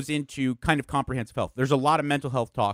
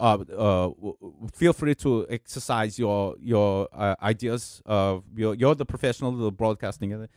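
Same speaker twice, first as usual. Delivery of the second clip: put-on thick, slow, heavy German accent; 5 semitones lower than usual. Retelling what a german boss said at a meeting: imitating a heavy german accent. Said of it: "he had a very heavy accent".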